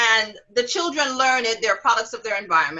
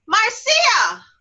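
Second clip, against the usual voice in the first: put-on high-pitched, loud child's voice calling out. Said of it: "She said to me".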